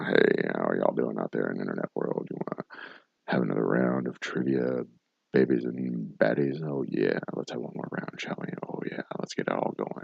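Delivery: very low, deep, breathy, hushed radio host voice. Trivia show host greeting the internet audience before another round, in a deep radio voice. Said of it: "talk in my deep radio voice, breathe heavily into the microphone".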